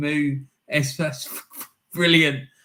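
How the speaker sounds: amused speech broken up by laughter. Reading out a goal's assist name, laughing while talking. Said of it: "I'm just laughing at the name".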